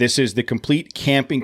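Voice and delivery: ordinary talk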